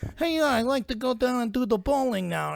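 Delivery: very high, nasal voice. Recalling the first time the young actor spoke on screen: Marlon Brando impression. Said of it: "he actually sounds like that".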